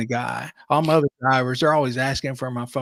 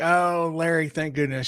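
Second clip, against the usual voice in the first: put-on very drunk, gushing tone; 4 semitones higher than usual. Retelling what a passenger said getting into the car: imitating a very drunk passenger. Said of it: "She was very drunk".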